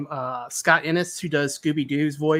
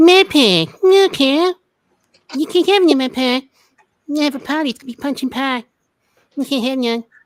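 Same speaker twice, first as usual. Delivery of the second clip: shrill, very high, very loud put-on voice; 10 semitones higher, 9 dB louder than usual. Asked to do a voice, pulling the mic closer, Cartman voice. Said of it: "do Cartman".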